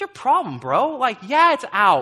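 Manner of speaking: high, loud, annoyed, snapped back.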